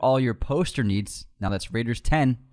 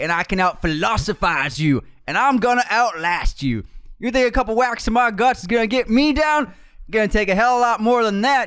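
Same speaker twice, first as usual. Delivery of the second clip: put-on Southern accent, higher and louder; 11 semitones higher, 5 dB louder than usual. Doing a movie quote impression in a southern accent. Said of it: "I'll try Southern for this".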